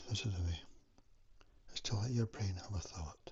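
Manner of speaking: slow tortoise-like voice. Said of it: "I'll do this tortoise method now".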